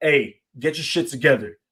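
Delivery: firm, no-nonsense, scolding man's voice. Imitating a man telling an acting-up girl off: imitating a man putting his foot down. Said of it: "you need that man to put his foot down".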